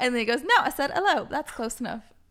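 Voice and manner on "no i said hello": put-on English accent, pitched up. Quoting the little caterpillar from Labyrinth: imitating an English accent. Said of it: "you can do a better English accent than I can".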